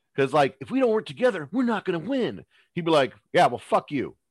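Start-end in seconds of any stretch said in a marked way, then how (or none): 3.3-4.1 put-on angry turtle voice, louder. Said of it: "Why are you angry?".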